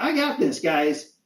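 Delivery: small, squeaky, high little critter voice. Narrating a scene, the speaker voices Squirt speaking from behind: squeaky Squirt voice. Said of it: "you hear a squeaky voice from behind you say".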